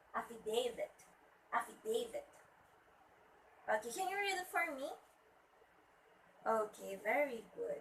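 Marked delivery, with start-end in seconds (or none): 0.1-2.2 affidavit with stress on the second syllable. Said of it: "should be at the second syllable".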